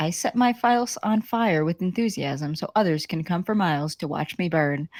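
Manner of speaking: ordinary talk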